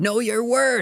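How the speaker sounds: put-on very high-pitched, loud yelled call. Retelling being called after while leaving: imitating someone yelling. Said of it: "I remember you yelling out the door".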